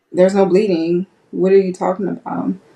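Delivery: ordinary talk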